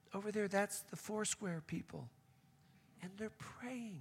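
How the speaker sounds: hushed, quiet tour guide voice.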